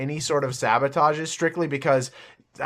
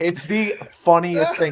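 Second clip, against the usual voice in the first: ordinary talk, nothing marked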